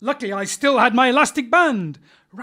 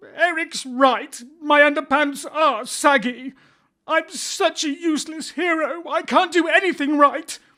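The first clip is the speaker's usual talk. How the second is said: near tears, voice breaking, tearful; 4 semitones higher than usual. A superhero just insulted by eric, crying. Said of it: "I'm... going to cry".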